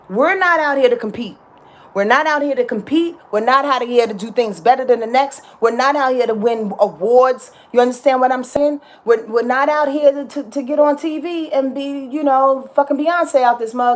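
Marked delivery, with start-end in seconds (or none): none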